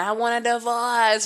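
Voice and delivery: put-on screaming. Recalling a fight with a spouse, retelling own screaming. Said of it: "And I'm screaming".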